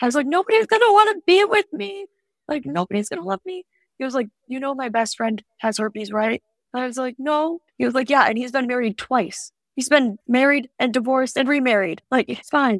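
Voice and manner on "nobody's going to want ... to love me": tearful despair, sobbing, pitched very high. Recounting calling their dad, acting out their past self sobbing. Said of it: "you're crying over nothing".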